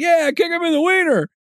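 mock shout, very high-pitched. Telling a story, quoting somebody in the section yelling out: retelling someone's yell. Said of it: "somebody yells out".

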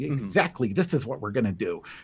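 really clumsy, poorly done put-on nerdy voice. Imitating a Robot Chicken nerdy character, in a bad Macaulay Culkin nerd voice. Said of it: "That is my really bad impersonation of Macaulay Culkin's nerd voice".

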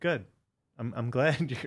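snarky, with mock sincerity. Retelling a coach's reply to complaining about a relationship: imitating a snarky reply. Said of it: "in a snarky, but, like, real way".

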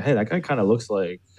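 ordinary talk

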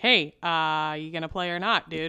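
put-on nonchalant coach voice. Acting out a TV coach's words to a player: imitating Ted Lasso, nonchalant passive-aggressive. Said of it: "in his best, um, nonchalant, passive-aggressive way".

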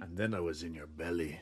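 jarringly deep, low-pitched delivery. Repeating a child's creepy line from a story: deep voice. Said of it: "your voice could get so deep".

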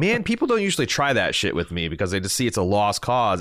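plain

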